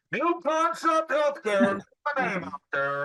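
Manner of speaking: mild, high-pitched, pretend street-hawker yell. Acting out running outside to promote a business: pretend yelling. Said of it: "Why are you yelling at me?".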